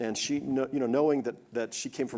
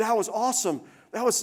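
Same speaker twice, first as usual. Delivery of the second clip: very high-pitched, thrilled, excited shriek; 11 semitones higher than usual. Retelling a daughter getting off a roller coaster: imitating someone screaming excitedly.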